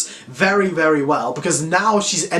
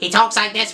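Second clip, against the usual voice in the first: put-on robot voice; 5 semitones higher than usual. Reviewer describes how a movie character talks: Norbot robotic voice. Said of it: "with a robotic kind of voice".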